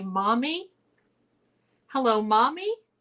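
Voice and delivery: tiny, sweet little voice. Retelling a voice heard on a recording, imitating a little sweet voice. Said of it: "you could hear a little voice say".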